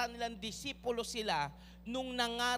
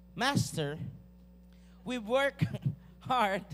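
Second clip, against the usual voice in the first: put-on strong Filipino accent, raised and loud; 6 dB louder than usual. Reading Simon's Bible line aloud, strong Filipino accent. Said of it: "Pinoy na Pinoy yung accent".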